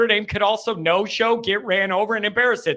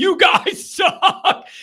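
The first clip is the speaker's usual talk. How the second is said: mock screaming, pitched very high; 10 semitones higher, 4 dB louder than usual. Retelling an older man screaming into the tunnel after the game, imitating someone screaming. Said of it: "literally screaming into the tunnel".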